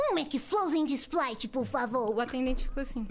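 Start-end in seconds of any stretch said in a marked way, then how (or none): 0.0-2.1 put-on cartoon kid voice. Ordering at a fast-food counter on a dare, Cebolinha voice. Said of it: "na voz do Cebolinha".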